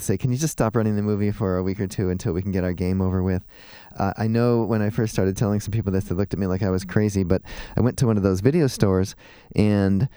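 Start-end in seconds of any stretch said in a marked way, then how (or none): none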